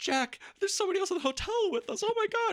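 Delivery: play-acted very high, frightened, breathless, gasping panic. Retelling a favorite film moment: imitating Wendy's panicked gasp.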